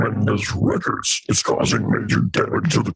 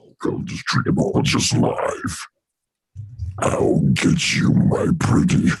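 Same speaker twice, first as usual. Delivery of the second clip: put-on demonic voice, much lower pitch; 10 semitones lower than usual. A streamer shows off voice effects while calling a guest onto the stream, Satan voice. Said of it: "It's like the Satan voice".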